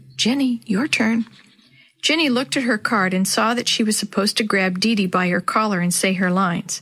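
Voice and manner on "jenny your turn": hushed, whispered. Mrs. Shue prompts Jenny during the scene, whispered. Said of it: "Shue whispered".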